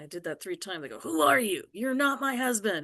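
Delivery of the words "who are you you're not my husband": forceful, high-pitched shout. Showing how forcefully she shouted at the intruder: imitating her own forceful shout. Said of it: "real forceful".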